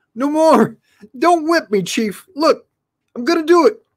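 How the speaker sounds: very high, shrill, pained yell. Narrating the story as Skullface scurries to the driver's seat: Skullface yelling with pain. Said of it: "A villainous head popped up".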